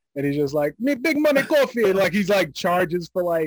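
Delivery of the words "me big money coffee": put-on Jamaican accent, pitched way up. Describing a character someone was working on, quoting him in a jamaican accent. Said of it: "he was using the Jamaican accent again".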